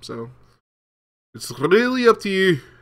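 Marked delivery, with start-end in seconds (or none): 1.3-2.6 terrible put-on Scottish accent, pitched up. Wrapping up a note to viewers about the videos, in a terrible scottish accent. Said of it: "My terrible Scottish accent".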